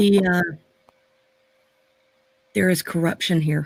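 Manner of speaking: voice dropped to a low hush. Voicing a character telling others about corruption: lowered voice. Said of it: "she's gonna kinda lower her voice".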